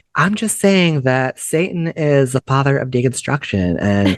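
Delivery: put-on preachy vlogger tone.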